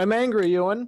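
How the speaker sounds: effeminate voice with pitch lifted high. Introducing the android man character, answering Ewan's greeting in an effeminate Troy King voice. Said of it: "Said with with some somewhat of an effeminate voice".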